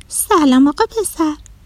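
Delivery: astonished, startled. A character greets a little boy walking on his hands, surprised. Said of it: "با تعجب بهش گفت".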